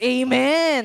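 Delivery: heartfelt amen. Showing the crowd how an excited amen should sound, amen with feeling. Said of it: "yung may feelings".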